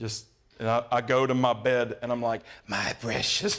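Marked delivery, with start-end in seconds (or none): 2.7-3.6 film creature voice. Describing retreating to bed on Sunday afternoons: Gollum voice. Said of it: "I'm almost like Gollum over here".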